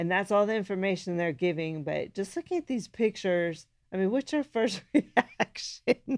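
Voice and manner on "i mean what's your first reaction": high, slowed speech broken by laughter. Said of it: "I'm just laughing 'cause your face".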